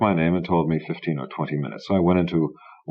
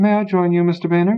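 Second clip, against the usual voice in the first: very high, loud put-on falsetto; 13 semitones higher, 5 dB louder than usual. Narrator approaches a man's table and greets him; fake falsetto. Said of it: "in a fake falsetto said".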